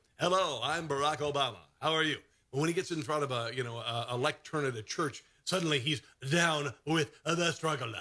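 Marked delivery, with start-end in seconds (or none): 0.2-2.2 local TV weather-forecast announcer voice. Mocking a politician's usual speaking style: Barack Obama as TV weatherman. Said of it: "Normally he talks like a T V weatherman".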